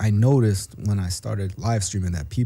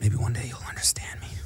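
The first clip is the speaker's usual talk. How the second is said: whispered softly, hushed, under the breath; 7 dB quieter than usual. Teasing someone who claims thick skin, in front of the listeners: whispering. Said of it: "Why are you whispering?".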